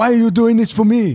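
very high-pitched, loud, pushed-out put-on voice. Showing another speaker an impression: Jackie Chan impression. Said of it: "that was my Jackie Chan".

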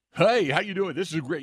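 loud, high, fake commercial announcer voice. Speaker demonstrating the commercial delivery they warn against, choke-and-puke commercial voice. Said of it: "what I call the choke and puke voice".

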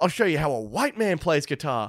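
showboating half-scream with rock-star bravado. Retelling how a man screamed while playing air guitar, retelling a scream. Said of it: "he just screams".

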